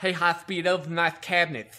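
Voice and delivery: mocking, put-on, exaggerated bad lisp. Retelling what the chief said in the shop: imitating a chief's bad lisp. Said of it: "he talked with a really bad lisp".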